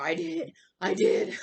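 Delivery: very slow, deliberate hero voice, each word drawn out. Retelling a movie scene, quoting the hero's reply: Batman voice. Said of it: "Batman has a very good voice in this, so my voice is just jacked up".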